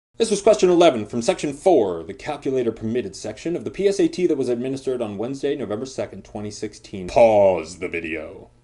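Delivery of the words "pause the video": put-on deep, low gargoyle character voice. A test-prep host addressing viewers before a PSAT question, in gargoyle voice. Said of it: "that was my gargoyle voice".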